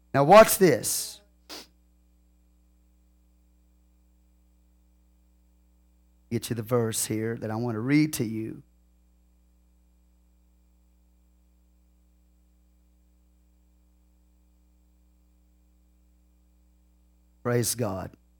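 talking fast. Finding a verse to read aloud, talking fast. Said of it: "I know I'm going fast".

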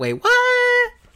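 very high squeaky put-on voice, "what" stretched long. Repeating the segment name on request: put-on high-pitched voice. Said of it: "With that high-pitched voice?".

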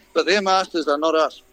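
ordinary talk, nothing marked

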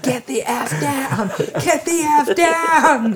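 panicked, high, slow, laughing scream.

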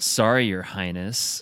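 put-on sassy tone. Quoting a mug's slogan aloud: imitating a sassy mug slogan. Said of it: "uber sassy".

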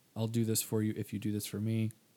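ordinary talk

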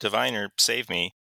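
normal talking voice

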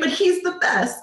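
insistent, pressing reply.

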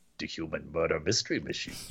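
very low, very quiet, hushed under-the-breath mutter. Retelling a story, the speaker quotes Taz, imitating Taz's real low voice. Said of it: "And real low Taz goes".

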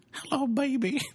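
very high, squeaky little toy voice. Imitating a little toy belonging to a son: imitating a child's toy voice. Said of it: "that's a little toy my son has".

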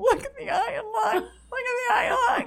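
put-on laughing while talking. Retelling seeing a stage prop, imitating laughing while talking. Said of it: "I can't stop laughing".

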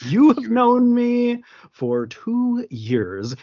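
slow, high, each word carefully enunciated. Retelling a film scene where a prisoner answers a guard: carefully enunciated Bruno S. imitation. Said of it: "very carefully enunciated every step of it".

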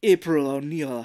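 imitated French accent. Retelling a movie character's line: imitating a french accent. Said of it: "I don't know why he's turning French now".

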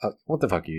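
imitated annoyed, irritated tone. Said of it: "looks over his shoulder and scowls at it".

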